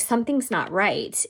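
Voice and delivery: normal talking voice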